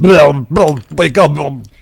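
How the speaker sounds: very loud high bellow. Instead of Alexa, a celebrity voice wakes someone up in the morning; do a Schwarzenegger impression. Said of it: "what if it's Schwarzenegger?".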